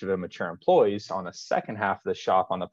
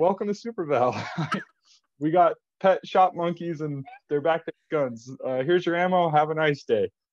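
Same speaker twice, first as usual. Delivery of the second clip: cheery, pitched-up, scripted tone while stifling laughter; 8 semitones higher than usual. Retelling serving a customer after hearing gunshots: retelling trying not to laugh. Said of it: "I'm trying not to laugh".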